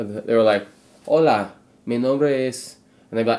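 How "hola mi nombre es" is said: slow, anglicized, bad Spanish accent and pronunciation. Recalling south carolina classmates in a foreign language class: bad spanish pronunciation. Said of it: "their native pronunciation".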